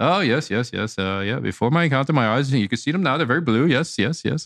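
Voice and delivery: put-on eager tone in an almost Irish, Irish-ish accent. Retelling the old man talking about his eyes: almost Irish accent. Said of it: "it was almost like an Irish accent".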